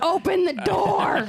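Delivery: very high-pitched, angry, acted-out put-on voice. Recalling a child locked in the bathroom, imitating Dad's angry voice. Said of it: "Dad got his angry voice on".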